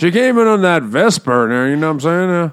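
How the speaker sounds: loud Missouri drawl. Mocking a book's dialogue, doing James Bond in a Missouri accent. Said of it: "he goes to like straight Missouri".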